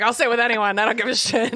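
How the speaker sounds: mock-snubbed, desperate, defiant outburst. Retelling how a character makes a point: imitating someone desperate. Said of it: "kinda desperate and trying to make a point".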